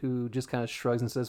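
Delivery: plain reading voice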